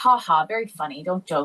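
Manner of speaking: laughing voice. Retelling someone's reply to news of a zero grade: imitating a chuckle. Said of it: "he kinda chuckled".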